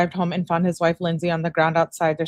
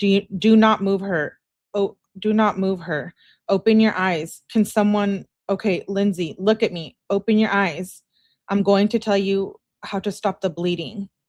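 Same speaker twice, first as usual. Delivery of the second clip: ordinary delivery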